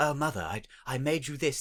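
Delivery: put-on soft, sweet, darling little voice with British accent. Retelling a toy maker giving his mother a shawl, in a darling little British voice. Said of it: "all speak in these darling little British voices".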